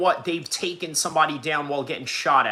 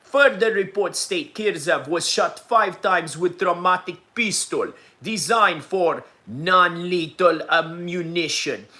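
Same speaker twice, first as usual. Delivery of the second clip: put-on Russian news-anchor voice; 2 semitones higher, 3 dB louder than usual. Host reads a news report aloud, in a russian newsman accent. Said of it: "did a little uh, Russian newsman accent".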